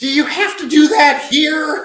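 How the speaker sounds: shrill, very high, very loud yell. Retelling the mother's reaction when the house power browned out: imitating mother yelling. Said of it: "And my mother just yelled".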